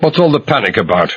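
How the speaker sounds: curt, short demanding tone. Reading a thriller aloud, the narrator demanding of a stranger: curt demand. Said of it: "I demanded shortly".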